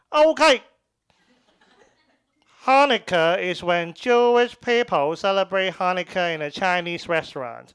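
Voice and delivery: put-on Chinese accent. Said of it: "I had like a thicker Chinese accent back then".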